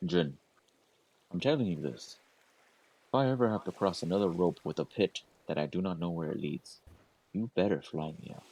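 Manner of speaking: hushed, muttered under-breath whisper. Game master voicing a character who goes up to Jin: whispering under his breath. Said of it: "go kind of whisper under his breath".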